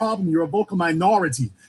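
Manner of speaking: "minority" stressed, rattled off fast.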